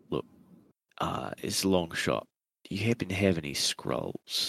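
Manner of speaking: low tone. A player in a game asks two characters a question, in a low tone. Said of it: "I speak in a low tone".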